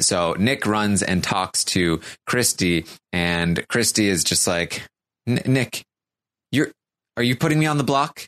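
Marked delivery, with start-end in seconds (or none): 5.3-8.3 mock upset, worked-up, freaked-out accusing tone. Recapping a show, acting out a woman's question to a man, acting out freaking out. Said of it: "Christy's freaking out".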